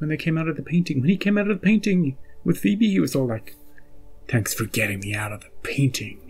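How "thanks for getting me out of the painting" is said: evil voice, much lower. Recounting a warlock's line on coming out of a painting, evil voice. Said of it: "they did the evil voice".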